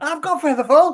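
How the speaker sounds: put-on screaming. Retelling a character's line as the party vanishes: imitating Sylvaris screaming. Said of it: "Sylvaris is screaming".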